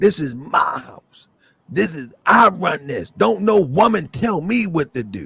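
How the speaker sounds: mock hostile, bristling, combative tone. Retelling a man's reply on a TV show after being told to calm down, mock-aggressive. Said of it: "he was really uh, uh, aggressive".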